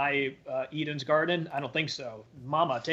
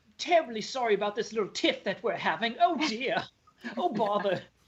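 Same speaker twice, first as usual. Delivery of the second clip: put-on, extremely British accent, overly polite, pitched up; 7 semitones higher than usual. Acting out a character apologizing for a tiff: put-on British accent. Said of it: "He's still extremely British throughout all of this".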